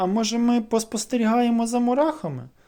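embarrassed, sheepish voice. Cyclo, a one-eyed little monster, answers his new friend Vichka, embarrassed. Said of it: "збентежено запропонував Цикло".

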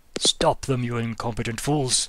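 loud, upset, angry wizard voice, belted out. Voicing an unseen figure ordering others: upset Gandalf voice. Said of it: "That sounds like an upset Gandalf".

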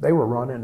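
ordinary talk

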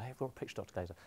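hushed, very soft half-whisper. Guest retelling a breakfast TV presenter's half-whispered question to him, retold half-whisper. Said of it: "so it's all whispered".

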